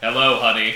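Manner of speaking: exaggeratedly deep man's voice. Imagining an actor playing a neurotypical man, in an exaggeratedly deep voice. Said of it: "a three-octave deeper voice".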